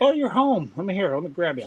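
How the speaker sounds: sing-song, swooping cat voice. Voicing the cat that just clawed into a leg: voicing the cat. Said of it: "She's like".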